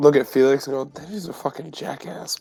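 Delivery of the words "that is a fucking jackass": very hushed, whispered under the breath. Player's character speaking while looking at Felix, whispering. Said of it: "But I'm like whispering it".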